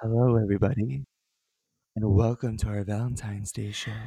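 sultry, sexy put-on radio-host voice. Opening their Valentine's Day show: sexy Disney radio voice. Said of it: "should we speak in our sexy Disney radio voices?".

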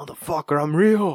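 super angry demon voice. Imagining a demon that wants to be believed: imitating an angry demon. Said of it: "That demon is just super angry".

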